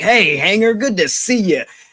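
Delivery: mock hearty, chummy tone. Retelling a backstage moment where one wrestler grabs another: imitating Matt's jovial greeting. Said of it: "just jovial smile".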